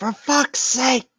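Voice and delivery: high, slow shout from a distance. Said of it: "you hear in the distance Radon shouting".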